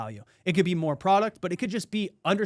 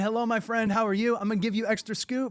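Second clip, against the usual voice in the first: put-on friendly shop lady voice, higher; 4 semitones higher than usual. Retelling how the shop lady greeted the speaker on return visits, imitating the friendly shop lady. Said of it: "She's saying".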